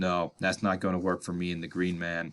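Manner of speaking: low, soft monotone character voice. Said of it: "He's like".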